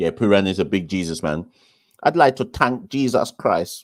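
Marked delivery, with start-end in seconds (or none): 2.0-3.8 really bad Trinidadian accent, pitched up. Talking about Puran and imitating him, bad Trini accent as Puran. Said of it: "That was a really bad Trini accent".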